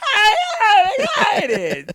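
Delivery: very high, bouncy, swooping, excited cartoon voice. Show a listener how Jake sounds when he does the voice, imitating Jake's excited cartoon voice. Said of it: "It's a cartoon voice".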